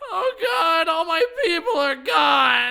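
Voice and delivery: high, loud, drawn-out crying through sniffles. Aang, asked by Katara if he's crying, breaks down: crying. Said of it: "*Aang Sniffles*".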